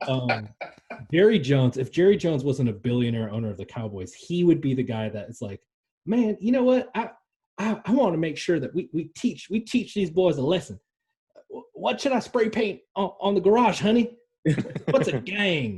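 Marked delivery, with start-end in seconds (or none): 6.0-15.8 put-on Southern accent taken very high in pitch. Imagine the Cowboys owner if he weren't a billionaire: Jerry Jones impression, Southern voice. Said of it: "with my Southern voice".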